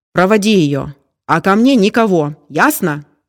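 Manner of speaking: slow, menacing, threatening shout. The office owner gives orders to a blond man at the door, shouting threateningly. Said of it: "Угрожающе крикнул".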